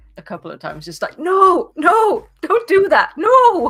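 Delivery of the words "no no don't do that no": very high, very loud, very slow, shrill, drawn-out screaming. Retelling watching a movie with intense scenes: imitating own screaming. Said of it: "I think I was screaming at a couple of".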